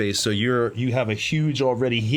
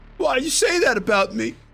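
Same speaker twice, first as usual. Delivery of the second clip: very high, sad and angry wounded indignation; 13 semitones higher than usual. Voicing a character reacting to what a player just said, sad pissed. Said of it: "like he's pissed, but like a sad pissed".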